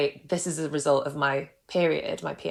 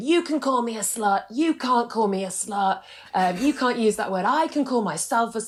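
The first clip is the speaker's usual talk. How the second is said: shouting, higher; 7 semitones higher than usual. Retelling pointing at mum in a family dinner argument: imitating own past shouting. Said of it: "I'm literally shouting".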